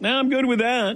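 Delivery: high, mock dismissive shrugging-off tone. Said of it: "what quarterback would say".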